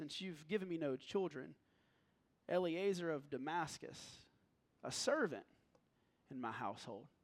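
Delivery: deeply disappointed, lamenting voice. Acting out Abram's reply to God's promise: Abram's disappointed voice. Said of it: "hear the disappointment in Abram's voice".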